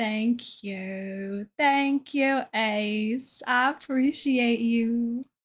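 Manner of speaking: hammed-up fake southern drawl, one word stretched out. Thanking Ace for a compliment while playing a game, in a fake southern accent. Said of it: "my fake southern accent".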